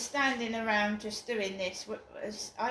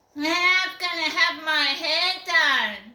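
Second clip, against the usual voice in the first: very loud, high-pitched screechy shout; 7 semitones higher, 11 dB louder than usual. Retelling a girl shouting as they left the field, the speaker imitates a screechy girl voice. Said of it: "this girl went in a really screechy voice".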